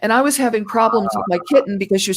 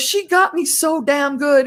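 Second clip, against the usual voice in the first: slow, play-acted squealing yelp broken up by laughter; 6 semitones higher than usual. Retelling a chief staggering out after a drill, imitating screaming and laughing. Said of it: "screaming and laughing".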